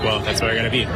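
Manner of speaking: usual speaking voice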